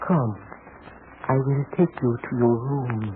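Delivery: soft, hushed, lulling hypnotic seance voice. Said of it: "Sorry to interrupt this hypnotic seance".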